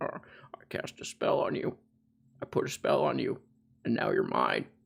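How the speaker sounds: hushed, whispery wizard voice. Joking that Professor Chomsky has turned into a wizard: Professor Chomsky as a wizard. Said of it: "He looks like a wizard to me. He's like".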